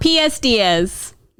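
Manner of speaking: deliberate put-on Boston accent. While trying out accents with a friend, speak in a boston accent. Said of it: "we're doing a Boston accent".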